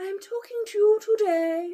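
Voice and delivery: upper class British voice.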